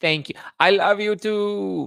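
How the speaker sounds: "too" very high, slow and stretched out. Answering a chat message: Kamala Harris impression. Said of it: "That was my best Kamala Harris impression".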